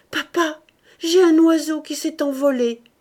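very loud, high-pitched, stumbling, stammering cry. Suddenly stricken with pain, a girl throws herself on her father's neck, stammering. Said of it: "elle balbutia".

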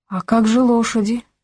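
falling-voiced whisper. She answers his plan to go to Maputo, whispering in a sinking voice. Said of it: "упавшим голосом прошептала она".

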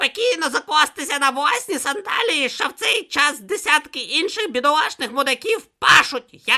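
ordinary delivery, nothing marked

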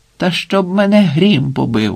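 sudden, exclaimed outburst, cried out. Tyshkevych protests after Hrytsyk calls his words untrue, exclaiming. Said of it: "вигукнув Тишкевич".

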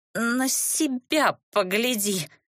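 trembling, shaky voice, snapping sharply. Katissa snaps back at Veres, who looks like a ghost: trembling, snapping. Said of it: "дрожащим голосом огрызнулась Катисса".

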